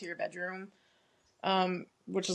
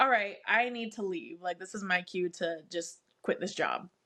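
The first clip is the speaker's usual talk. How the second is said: usual speaking voice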